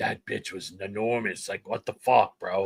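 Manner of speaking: put-on angry man's outburst. Retelling what a man said when he came back, imitating an angry man. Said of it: "He was so mad".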